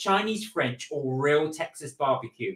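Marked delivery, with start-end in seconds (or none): none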